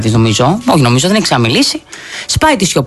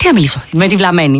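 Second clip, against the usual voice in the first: normal talking voice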